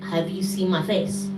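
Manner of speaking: ordinary delivery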